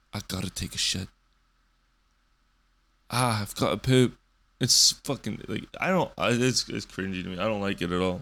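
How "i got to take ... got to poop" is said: imitated British accent. Mocking how british people say they need the toilet: imitating a british accent. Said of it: "I fucking love British accents".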